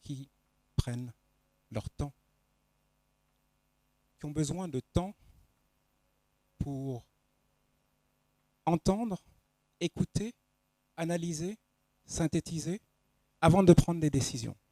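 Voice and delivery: calm, settled, composed, serene delivery. Showing how auditory listeners sound in a lesson: calmer, more composed voice. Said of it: "la voix que je viens de prendre, une voix plus posée, plus sereine".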